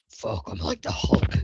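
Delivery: breathy, dropped-low voice. Player speaking as Baron, who tries to push the doors open, in a low voice. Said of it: "give us a low voice by saying that".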